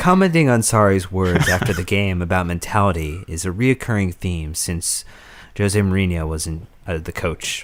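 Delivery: very calm, soothing public-radio news reading. Speaker reads a question aloud to bring everyone's emotions down, very calm reading. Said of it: "I'm going to try to read it very calmly".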